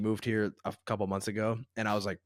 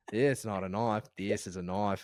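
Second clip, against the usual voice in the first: put-on Australian accent; 2 semitones lower, 4 dB quieter than usual. After being told the accent is pretty good, doing an Australian accent. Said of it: "I can't do any more Australian".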